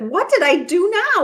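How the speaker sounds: put-on desperate cry, very high. Retelling how he chased her, asking what he did: imitating a desperate tone. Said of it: "He actually sounded sort of desperate".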